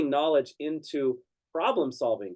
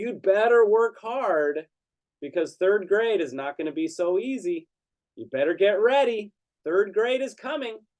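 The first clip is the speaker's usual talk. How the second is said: loud put-on girl voice, higher pitch; 6 semitones higher than usual. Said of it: "kept kinda speaking loudly so everyone could hear".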